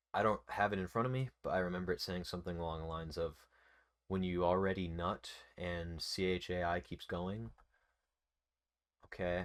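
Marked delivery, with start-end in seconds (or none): none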